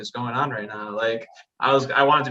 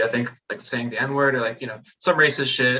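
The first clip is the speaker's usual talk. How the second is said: ordinary delivery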